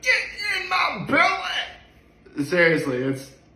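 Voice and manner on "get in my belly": very high-pitched, every word drawn out. Quoting the movie trilogy: Fat Bastard impression. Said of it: "I could always do Fat Bastards".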